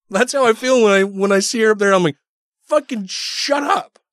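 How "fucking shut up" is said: put-on rage, much higher, slower. Describing his reaction to seeing her up there, acting out rage. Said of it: "that's enough rage talking about her".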